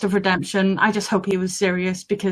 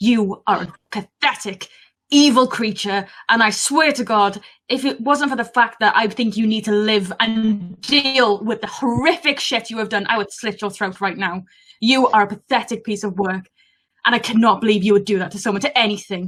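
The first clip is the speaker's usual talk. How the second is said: spiteful, really venomous tone; 3 semitones higher than usual. Turning to Gurn in the story and speaking to him, really venomous. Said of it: "in a very ven- like really venomous".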